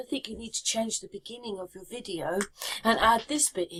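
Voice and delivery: ordinary delivery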